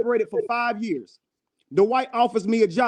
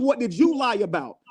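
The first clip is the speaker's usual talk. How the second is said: ordinary talk, nothing marked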